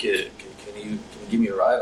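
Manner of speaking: ordinary delivery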